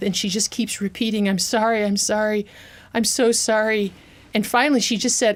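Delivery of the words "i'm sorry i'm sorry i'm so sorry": mimicked gasping, much slower. Recounting how she tried to comfort them, imitating her gasping apologies. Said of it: "she's gasping for breath".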